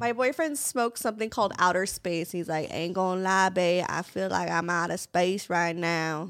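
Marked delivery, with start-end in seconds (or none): 2.7-6.3 laid-back, slow, drawn-out Saint Louis drawl. Retelling what a high boyfriend says: imitating boyfriend's Saint Louis accent. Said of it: "a Saint Louis accent".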